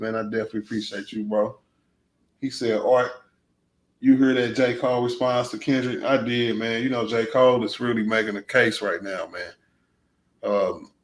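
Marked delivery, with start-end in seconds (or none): none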